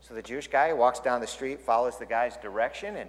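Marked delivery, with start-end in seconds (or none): none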